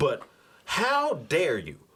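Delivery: pissed-off, indignant, swooping angry rant. Reporting wrestling news, then venting at WWE: angry rant. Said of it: "my anger's kicking in".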